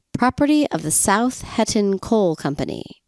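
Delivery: ordinary talk, nothing marked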